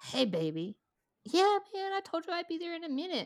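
imitated voice of a man with no teeth. Retelling a man's call on an old flip phone, imitating a toothless man. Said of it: "Mind you, he has like no teeth".

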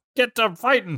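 put-on screaming voice. Retelling a scene, voicing Misty screaming at Ash. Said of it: "And she screams at Ash".

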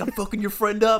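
very high taunting yell, laughter breaking in. Recounting a fight, the speaker quotes a man yelling to his friend, retelling a yell. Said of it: "he's yelling to his boy".

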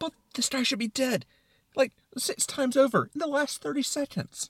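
very high, fretting, deeply concerned tone. Acting out the brain's side of an inner argument, in a mock-concerned tone. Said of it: "in a very concerned tone".

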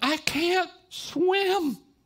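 very high, drawn-out screaming cry. Retelling what she screamed in the mangroves, imitating a scream. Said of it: "she starts screaming".

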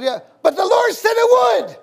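very high, loud, sudden burst of yelling. A pastor recounts what he yelled at a man who said it wasn't working, retelling own yell. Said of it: "And I just yelled".

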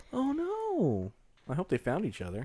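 sad, hushed, high half-whisper, drawn-out "no". Reacting to a sad story about separated zoo elephants: half-whispering. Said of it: "We're whispering 'cause it's sad".

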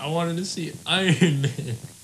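put-on high, slow, sobbing child's crying wail. Retelling a Make-A-Wish kid meeting Tom Holland as Spider-Man; imitating a crying kid. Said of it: "starts crying".

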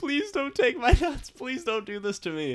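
mock very high, swooping blubbering sob like a baby. Describing a movie character's pathetic end, imitating sobbing plea. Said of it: "he is sobbing like a fucking baby".

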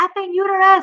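loud, high scream. Retelling an unmedicated clot removal: imitating own screaming bloody murder. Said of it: "I'm screaming, like, bloody murder".

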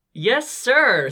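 forced out through gritted teeth. Addressed as the new one, answering through gritted teeth. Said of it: "through gritted teeth".

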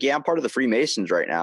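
normal talking voice

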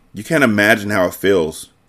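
ordinary delivery, nothing marked

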